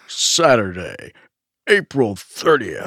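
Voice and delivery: put-on elderly man's monster truck announcer voice. Co-host repeats the date to show how it sounded, in an old man's monster truck voice. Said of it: "That's like a very old man doing Monster Truck voice".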